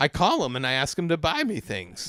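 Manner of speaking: put-on old-fashioned, sing-song nineteen-fifties housewife voice. Two speakers mocking a woman who sounds like one, imitating a 1950s housewife. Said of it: "she sounds like a fucking nineteen fifties housewife".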